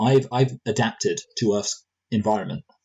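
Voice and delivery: ordinary talk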